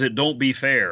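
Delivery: put-on thick drawling Louisiana accent. Recounting a scene, quoting a henchman arguing with his boss, stereotypical Cajun accent. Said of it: "who is like super stereotypical Cajun".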